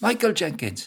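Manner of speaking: put-on calling out loudly in a Welsh accent. Retelling running after an older schoolmate and calling his name, welsh accent. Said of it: "Welsh accent".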